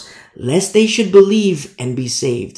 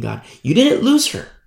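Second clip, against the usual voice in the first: ordinary talk, nothing marked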